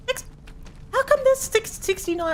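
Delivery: very high, panicked stammer. Realizing dozens of them are gathered out front, stuttering and freaking out. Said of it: "I'm stuttering. That's how freaking out".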